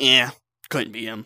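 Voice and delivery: mock-dismissive, shrugging tone. Complaining about a teammate who ignored a traitor, mimicking him: mocking a dismissive teammate. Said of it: "you're like".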